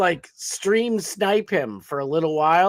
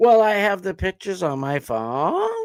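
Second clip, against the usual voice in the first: mock uptalk, rising intonation on every sentence. Mocking people who uptalk: imitating uptalk. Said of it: "'cause it doesn't sound like you're confident".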